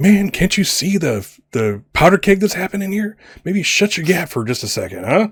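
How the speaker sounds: close, leaning-in, high-pitched stage whisper. Voicing an official who leans in to a player: half-whispering in character. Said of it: "kinda leans into you and whispers".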